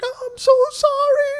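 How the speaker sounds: mock flustered, very high, loud, drawn out, freaked out. Speaker recalls the lady who rear-ended him apologizing, imitating her freaking out. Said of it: "like she's freaking out".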